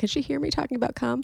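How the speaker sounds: high, hushed half-whisper under the breath. Asking aloud whether another person's mom can hear: half-whispering. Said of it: "now I have to whisper".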